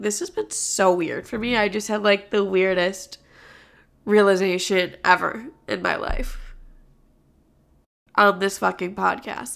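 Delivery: teary voice after crying. Talking about a breakup right after crying about it: teary voice after crying. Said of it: "as you can probably hear in my voice, I've been, like, teary-eyed".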